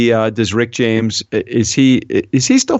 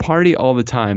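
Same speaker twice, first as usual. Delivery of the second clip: plain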